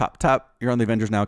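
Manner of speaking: put-on nonchalant, offhand voice. Retelling a movie scene where Stark walks past Peter: nonchalant Tony Stark voice. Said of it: "Very nonchalant Stark".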